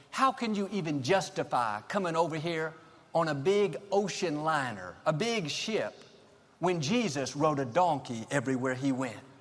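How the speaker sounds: usual speaking voice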